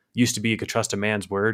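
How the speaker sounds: plain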